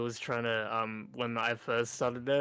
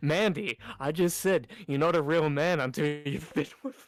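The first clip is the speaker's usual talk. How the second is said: mock, very loud, blurted-out delivery; 4 semitones higher, 4 dB louder than usual. Retelling a remark said to a leader at work: imitating Brayden saying it really loud. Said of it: "he says really loud to her".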